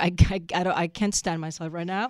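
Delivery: ordinary delivery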